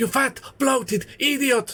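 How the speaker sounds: very high-pitched full cartoon character voice. Saying they can't do Stimpy but can do Ren, the speaker does a Ren voice. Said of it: "I can do Ren!".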